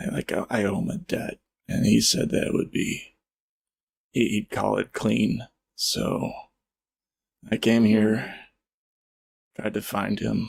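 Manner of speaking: words broken up by coughing. A wounded survivor tells the party why he came alone, as a coughing wounded survivor. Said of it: "He coughs up more. / He coughs up more".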